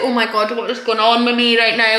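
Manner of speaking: mock scared, bewildered, alarmed panicky outburst. Retelling riding roller coasters while worried: retelling own past panic. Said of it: "I'm panicking on all these roller coasters".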